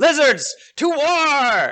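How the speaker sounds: very high rallying war cry, war stretched out. Voicing a lizard leader rallying warriors to battle: Wadjet's war cry. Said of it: "Wadjet grabs a".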